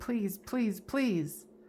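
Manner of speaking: beseeching, begging, pleading, repeated. The speaker acts out what she says, imitating begging. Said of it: "she's almost like begging".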